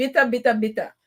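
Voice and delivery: rough, put-on Jamaican accent. Addressing Jamaican squaddies, doing the best they could: fake Jamaican accent. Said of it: "my fake Jamaican accent".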